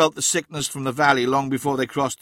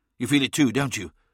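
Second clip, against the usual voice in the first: usual speaking voice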